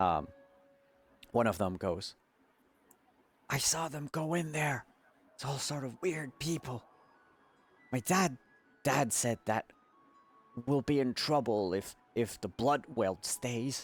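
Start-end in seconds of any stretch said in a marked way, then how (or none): 3.5-13.9 put-on high child's voice in a stage whisper. Speaker voices one of the children heard whispering, in a children's stage whisper. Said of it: "children stage whispering".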